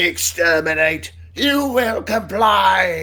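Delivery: very high, loud, blasting robot voice. Friends coaching how to say exterminate, the speaker shows how: Dalek robot voice. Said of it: "You gotta do the robot voice with it".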